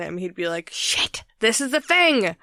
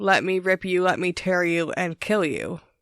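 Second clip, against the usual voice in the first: put-on creepy, eerie, disembodied-sounding voice. Quoting a voice heard in the hallways to a co-host, creepy disembodied voice. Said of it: "weird, creepy, disembodied voice saying".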